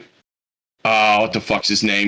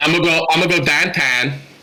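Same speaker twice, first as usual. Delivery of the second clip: put-on higher-pitched, forced Pittsburgh accent. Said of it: "You're not really even good at your own accent".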